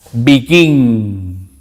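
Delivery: begin stressed on the second syllable. Teaching English word stress in Spanish, begin stressed on second syllable. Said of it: "mayor fuerza de voz, begin, al final, en la segunda sílaba".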